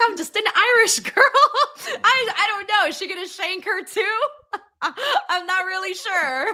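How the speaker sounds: put-on frightened and unsure, very high voice. Retelling how Becky reacted: imitating a scared Becky. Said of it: "Becky was so scared".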